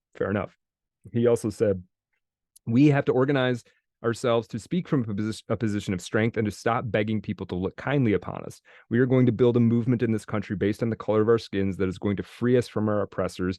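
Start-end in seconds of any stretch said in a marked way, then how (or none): none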